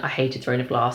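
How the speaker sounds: ordinary talk, nothing marked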